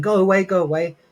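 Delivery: mock full scream, high-pitched. Retelling how a woman screamed when they knocked on her door, retelling a scream. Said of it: "she's screaming".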